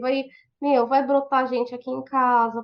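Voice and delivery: ordinary talk, nothing marked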